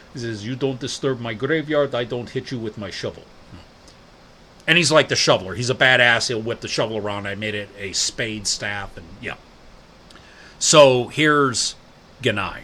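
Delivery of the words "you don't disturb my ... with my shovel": put-on Slavic accent. Describing the shovel-wielding dwarf character in their game, Borzunka's Slavic accent. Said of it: "His Slavic accent".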